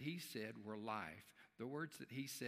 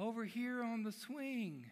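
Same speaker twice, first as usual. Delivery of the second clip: tiny little, very high voice; 11 semitones higher, 6 dB louder than usual. Telling a joke, voicing an unseen speaker's reply from the swing: tiny little voice. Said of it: "he hears the voice say".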